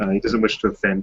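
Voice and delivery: ordinary talk, nothing marked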